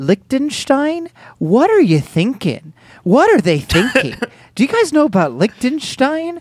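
Minnesota accent, very high-pitched voice. Talking to the others about liechtenstein, in a minnesota accent. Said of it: "You kind of hit a Minnesota accent".

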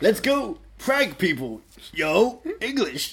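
bro-style actor voice, pitched high. Showing a co-host an impression of a character from the comedy Entourage, Johnny Drama impression. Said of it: "That's my drama impression".

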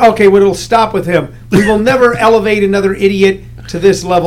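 ordinary talk, nothing marked

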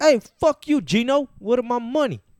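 very high, very loud fake New York accent. Joking around about accents, one speaker launches a bit in a put-on New York accent. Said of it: "Are you saying everyone from New York's Puerto Rican".

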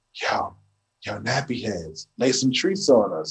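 whispering. Describing how a record begins, imitating own whispered line. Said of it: "And then I'm whispering".

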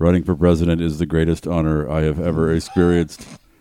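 robotic, low, flat monotone. Pretending to be a lizard person speaking, in a flat monotone lizard-person voice. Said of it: "Pretend you're a monotone lizard person going".

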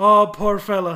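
put-on Irish accent. Retelling the cop reacting to a crash: imitating an irish cop. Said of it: "the Irish cop".

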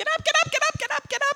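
put-on high-pitched repeated chorus of yells. Recounting being woken up, the speaker re-enacts everyone around: imitating people yelling. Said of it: "Everyone started yelling".

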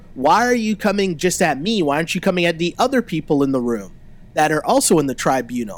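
plain

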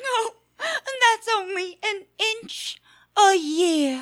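words pushed out through tears. Mother consoling her tiny son Tim about his height, crying. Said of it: "Don't cry, Mum".

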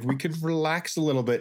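high, gentle, soothing calming tone. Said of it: "And I'm like".

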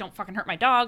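plain

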